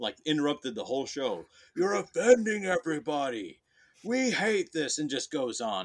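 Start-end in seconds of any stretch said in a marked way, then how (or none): 1.8-5.0 put-on high, screamed yelling outburst. Retelling how a man stood up and interrupted the show, retelling a scream. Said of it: "just screams".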